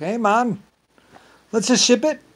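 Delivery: put-on Irish accent, pitched very high. Speaker voices what the smugglers say, in an Irish accent. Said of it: "With the Irish accent, sorry".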